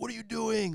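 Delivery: mock piercing, very high-pitched scream. Retelling screaming at the TV during a game: imitating a scream. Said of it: "screamed at the T V and were like".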